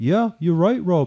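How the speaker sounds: attempted put-on Liverpool accent. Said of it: "I can't Liverpudlian very well".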